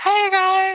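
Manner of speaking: very high-pitched female voice. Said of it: "here's some female voices".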